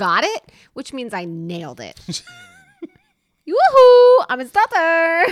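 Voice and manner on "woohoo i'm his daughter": very high, shrill, very loud put-on Swedish accent. Voicing the woman in the show who says she's his daughter; Swedish accent. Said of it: "I totally went with the Swedish accent".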